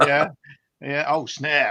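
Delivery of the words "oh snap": loud, exaggerated, bad put-on American accent. Imitating a collector who says snap when he finds stuff: terrible american accent. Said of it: "That's my terrible American accent".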